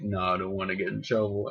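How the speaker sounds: usual speaking voice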